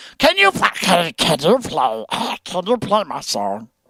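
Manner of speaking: creepy creature voice with swooping pitch. Mocking annoying kids in a chat, Gollum voice. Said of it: "They all sound like Gollum".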